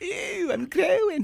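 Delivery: very high, squeaky, creaky, rasping goofy voice. Retelling being stuck in a bathrobe arm like a pink tube, reenacting their silly voice. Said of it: "I talked like this".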